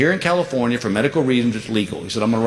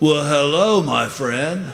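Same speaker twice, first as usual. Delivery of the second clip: put-on California surfer-style voice; 3 semitones higher than usual. Retelling walking into the wrong bar and a voice greeting from behind, California surfer voice. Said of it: "they speak like California surfers".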